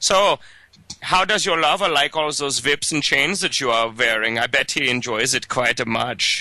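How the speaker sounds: put-on thickest, broad German accent, laid on heavy. Retelling what an executioner fellow said when he came up, in the thickest german accent. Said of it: "he says in the in the thickest German accent you've ever heard".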